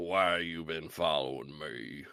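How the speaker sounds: low, soft, hushed character voice. Describing a movie scene, the speaker quotes the character: Sundown character voice. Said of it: "you heard what I my attempt just now, but I love Sundown's voice acting".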